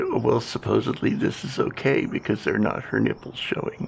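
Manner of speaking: usual speaking voice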